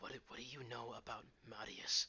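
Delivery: hushed whispering voice. Voicing a character who speaks to another in Elvish: whispering. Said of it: "he sort of whispers in Elvish".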